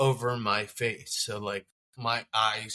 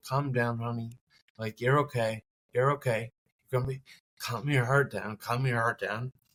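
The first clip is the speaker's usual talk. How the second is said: mock gentle, soothing, calming reassurance. Retelling how a nurse talked to the patient: imitating a calming tone. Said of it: "through her tone".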